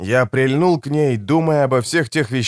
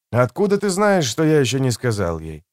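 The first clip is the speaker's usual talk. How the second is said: ordinary delivery, nothing marked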